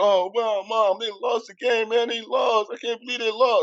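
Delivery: put-on babyish blubbering. Retelling hearing the team lost on the radio: imitating own past crying. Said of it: "I'm crying like a baby".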